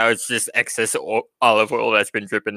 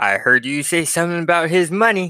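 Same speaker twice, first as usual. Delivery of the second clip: menacing, intimidating, pitched-up tone; 7 semitones higher than usual. Voicing Susie confronting a customer holding a kitchen knife: intimidating. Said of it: "as Susie attempts to intimidate you".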